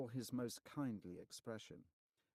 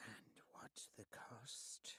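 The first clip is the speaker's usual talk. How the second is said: very hushed, sibilant, hissing whisper; 2 semitones higher, 10 dB quieter than usual. Answering from the deep shadows above after being called; hissing voice. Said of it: "came a hissing voice".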